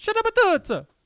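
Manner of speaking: very high, very loud, exaggerated fake Italian accent. Showing a friend how the phrase is said, in an Italian accent. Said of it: "they'd say it in an Italian accent".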